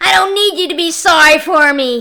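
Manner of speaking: spitting out the words. Reading a story aloud, a character snaps back: spitting out the words. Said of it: "he spit".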